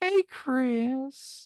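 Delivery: high-pitched, creepy called-out voice. Recalling yelling from the bar at a coworker at the host stand, old man from Family Guy voice. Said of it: "I would yell at him in the voice of the old man".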